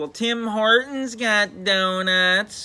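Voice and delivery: very slow whining drawl. Retelling Campbell's reply to Dad, imitating Campbell's whiny voice. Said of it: "just like in his whiny voice".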